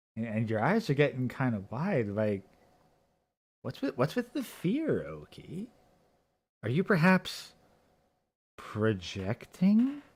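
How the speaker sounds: mock smug armchair psychologist voice. Mocking the other speaker as an armchair psychologist would. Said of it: "the fucking armchair psychologist here is like".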